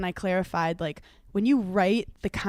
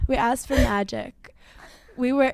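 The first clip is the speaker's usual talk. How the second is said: upspeak, every line ending on a rising tone; 4 semitones higher than usual. Quoting her words to a co-speaker, do a Megan Fox voice, as if about to ask a question. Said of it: "like she's about to ask a question".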